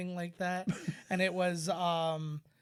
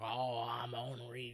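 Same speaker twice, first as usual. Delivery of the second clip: soft, light touch of put-on Cajun accent; 6 semitones lower, 6 dB quieter than usual. Joking about movie titles, putting on a Cajun accent: put-on Cajun accent. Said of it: "to have a little bit of a Cajun accent".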